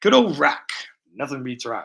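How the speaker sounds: put-on rock voice with swooping pitch. Building a model, the speaker does an impression of a rock. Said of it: "this is my impression of rock".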